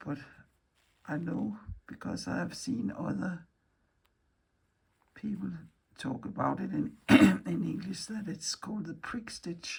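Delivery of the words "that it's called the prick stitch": voice failing and fading into a whisper. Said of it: "I'm losing my voice".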